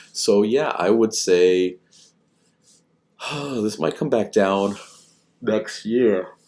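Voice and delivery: words pushed out mid-yawn. Giving a market outlook, then apologizing for yawning: yawning while speaking. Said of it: "pardon me for yawning".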